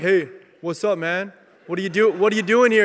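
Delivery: deliberately deepened voice. Retelling going up to a stranger at youth group: put-on deeper voice. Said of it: "I gotta get my voice a little bit deep".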